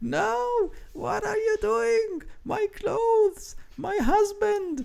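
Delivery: very high, frantic hag voice, drawn-out freaking out. Voicing a hag as a crocodile smashes her room: freaking out hag. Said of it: "the hag, you know, she flips".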